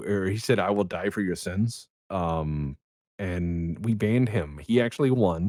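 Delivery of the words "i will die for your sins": ordinary talk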